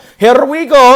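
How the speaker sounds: put-on Italian accent, very high, very loud, belted. Announcing a football signing as Fabrizio Romano, in Italian accent. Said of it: "That's the best Italian accent that I've got on hand".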